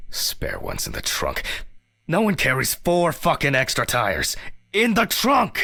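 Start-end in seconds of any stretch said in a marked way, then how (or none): 2.1-5.7 furious, very high-pitched, loud enraged outburst. Complaining to Ridley about flat tires: angry outburst. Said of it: "calm down".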